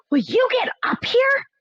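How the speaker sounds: impatient hiss, pitched way up. Narrator reading a character impatient for the narrator to climb up, hissing. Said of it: "he hissed".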